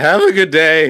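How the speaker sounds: slow voice cracking and breaking apart mid-phrase. Retelling answering a shopkeeper in England: imitating own cracking voice. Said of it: "your voice cracked?".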